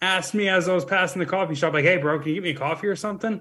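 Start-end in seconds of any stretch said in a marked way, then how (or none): 1.8-3.4 play-acted laid-back, very casual, offhand tone. Retelling a stranger asking for a coffee: imitating a very casual ask. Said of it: "very casual".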